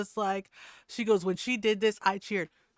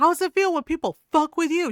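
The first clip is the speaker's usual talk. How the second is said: put-on angry woman's yell, higher and louder; 7 semitones higher, 8 dB louder than usual. Speaker reenacting what a woman yelled at a man, retelling her angry yell. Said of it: "She yelled".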